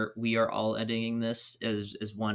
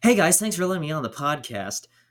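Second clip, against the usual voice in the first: high-energy upbeat voice, much higher and louder; 6 semitones higher, 7 dB louder than usual. After a vocal warm-up, greeting everyone on the podcast with big positive extroverted energy. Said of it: "a really big positive extroverted energy".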